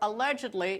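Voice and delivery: "allegedly" leaned on and set apart.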